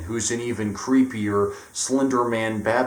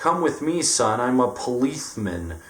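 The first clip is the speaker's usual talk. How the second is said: silly put-on lisp on s sounds; 2 semitones higher than usual. The library policeman in a comic bit, Tigger-like lisping voice. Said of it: "sounds like fucking Tigger, and he's like".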